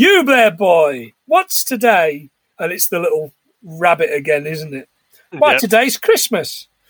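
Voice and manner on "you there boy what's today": slow, drawn-out holler flung outward. Retelling a scene where he opens the window and calls to a boy: retelling a shout. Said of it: "and he shouts".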